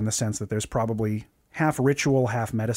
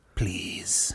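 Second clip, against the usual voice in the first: soft, whispery, mystic witch doctor voice; 5 semitones lower, 6 dB quieter than usual. Voicing a figure who invites the group in: whispery witch doctor voice. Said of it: "It's the whispery thing".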